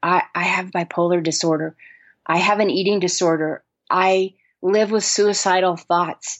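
acted whispering. Retelling what people confide about their illnesses: imitating a whisper. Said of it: "people now whisper in my ear".

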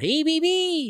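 mock very high, loud yell. Retelling how a man yelled out a car window at a woman, retelling a yell. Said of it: "just yells out".

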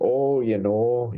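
put-on heavy Wisconsin-type accent. Describing two friends from Wisconsin, the speaker slips into a Fargo-type accent. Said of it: "those kind of Fargo type accents".

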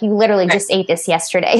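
normal talking voice

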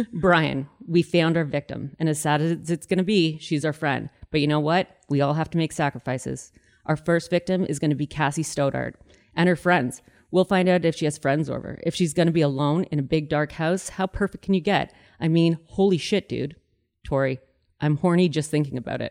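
usual speaking voice

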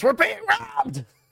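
sudden, very high goblin voice shout. A game master voices a goblin pulling out his dagger; yelling. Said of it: "and he just yells".

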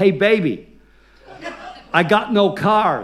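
acted, very slow, loud, drawn-out shout. Retelling what a rental office clerk shouted at the door: imitating a clerk shouting. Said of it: "it just shouted out".

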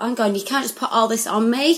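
normal talking voice

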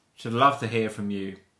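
normal talking voice

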